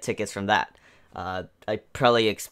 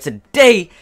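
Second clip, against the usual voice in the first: loud, excited delivery. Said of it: "you guys obviously hear the excitement within my voice".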